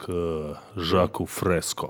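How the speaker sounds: put-on mysterious tone. Retelling how someone asked a question: imitating a mysterious tone. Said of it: "загадочным тоном".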